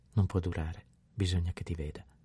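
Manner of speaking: ordinary delivery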